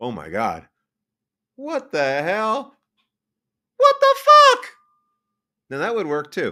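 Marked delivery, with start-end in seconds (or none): 0.0-4.7 very high, loud, full-out screaming. Showing possible line readings for a movie scene: screaming. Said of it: "I am screaming "What the fuck" loudly".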